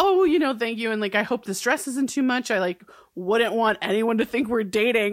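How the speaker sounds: sassy tone with a pointed edge. Retelling Grams's pointed remark to Dawson from the episode: imitating Grams, pointed and sassy. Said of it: "she says it, like, all pointedly and sassy towards him".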